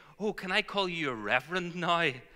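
put-on high, gushing, very excited mum voice. Quoting mum's reaction to the licensing news: imitating mum's excitement. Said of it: "she said very excitedly".

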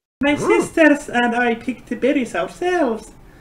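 put-on young halfling woman's voice. Game master voices Breeze serving the party breakfast, as Breeze, young halfling woman.

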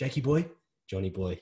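matey, cheeky, teasing and mocking tone. Retelling how the club captain greeted people: imitating a cheeky mocking greeting.

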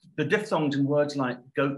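ordinary talk, nothing marked

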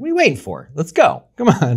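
aggravated, swooping, pushing delivery. Showing how they say their motivational line: Bill Burr style. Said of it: "I say it more like the Bill Burr kinda".

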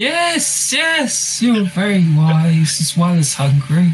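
stomach character voice. A game master voices a stomach answering a player's riddle guess, as a voice from the stomach. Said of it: "and you hear a sound coming from your stomach, [name]. Yeah. Would you like me to grant you three wishes?".

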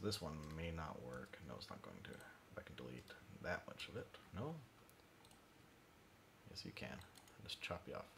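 muttered under breath. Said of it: "I'm probably mumbling again".

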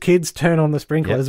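ordinary talk, nothing marked

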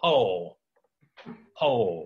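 put-on American Southern accent. Explaining a point, briefly putting on a Southern accent. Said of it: "To use a Southern, uh, accent there".

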